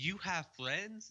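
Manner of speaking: mock deeply skeptical, very doubtful tone. Retelling a man looking down the stairs and asking a question, imitating a questionable voice. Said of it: "in like a very quite like a questionable voice".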